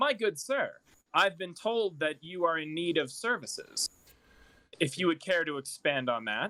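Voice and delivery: theatrical, dramatic, formal courtly politeness. Voicing a character bowing deeply to a noble: dramatic formal courtesy. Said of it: "gives a deep bow dramatically".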